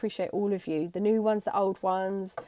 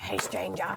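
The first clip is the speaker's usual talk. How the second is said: creepy-sounding voice; 6 dB quieter than usual. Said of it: "That sounded really creepy".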